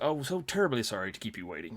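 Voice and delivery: speaking in a put-on British accent. Retelling what a man said when he walked in, in a British accent. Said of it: "in this British accent".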